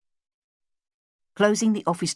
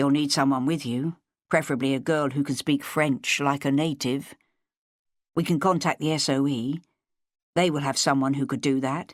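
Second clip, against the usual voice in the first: usual speaking voice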